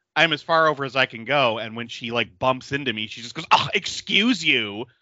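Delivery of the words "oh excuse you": high, play-acted entitled tone. Retelling what a coworker said after bumping into someone: imitating an entitled tone. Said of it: "in that tone of voice".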